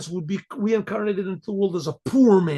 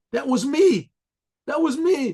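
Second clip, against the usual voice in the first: acted-out high anguished yell, crying out in anguish; 6 semitones higher than usual. Telling a story, acting out a trembling man who answers: retelling a yell. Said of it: "He yelled out".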